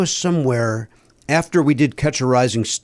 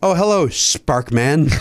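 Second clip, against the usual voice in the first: mock condescending tone, acted. Retelling how another man greeted a comic, imitate a condescending greeting. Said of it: "in just the most condescending tone".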